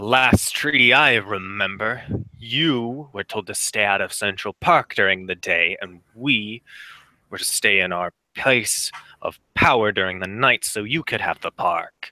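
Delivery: words growled out angrily. Narrating a scene, the speaker voices the figure who pinned the listener: growling. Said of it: "He he growls and he says".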